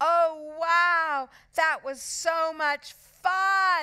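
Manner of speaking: shrill, high, loud, drawn-out squeal. Strolling past with a friend, laughing, squealing. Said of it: "squealed Moody Margaret".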